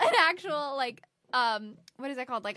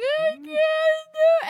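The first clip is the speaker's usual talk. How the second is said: put-on wailing sob, very high, loud and slow; 9 dB louder than usual. Retelling crying in a lab while ill: imitating her own past sobbing. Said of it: "sobbing 'cause I couldn't get it right".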